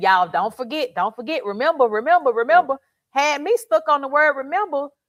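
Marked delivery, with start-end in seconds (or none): none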